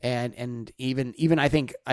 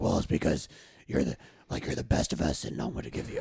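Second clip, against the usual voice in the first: hushed, breathy put-on superhero voice, breathed out; 8 semitones lower, 5 dB quieter than usual. Retelling what Batman says in a story, doing a Batman voice. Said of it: "that's my Batman voice".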